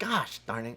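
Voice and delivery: gentle, mild, tame outburst of being cross. Showing an impression of someone getting mad: imitating Ken Day getting mad. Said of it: "That was what he say".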